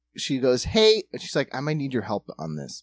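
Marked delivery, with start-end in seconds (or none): 1.6-2.9 gentle, very nice, courteous and polite tone. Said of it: "very nicely".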